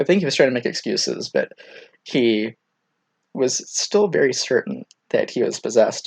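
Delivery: ordinary delivery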